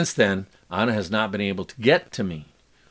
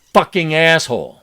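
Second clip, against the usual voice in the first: acted-out scream, higher and louder; 6 semitones higher, 5 dB louder than usual. Reading a journal entry about a fight, imitating a scream. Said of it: "and then I screamed".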